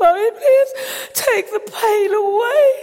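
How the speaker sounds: mock very high, loud, sobbing child's voice. A parent retells praying with Daniel at the bedside, imitating Daniel crying. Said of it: "he's crying".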